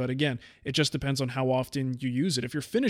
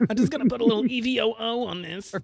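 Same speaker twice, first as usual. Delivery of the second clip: bad, hammy put-on voice, pitched very high; 9 semitones higher, 3 dB louder than usual. Joking about saving filter cartridges: bad Rachel Ray impression. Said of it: "that's my Rachel Ray impression, which is pretty bad".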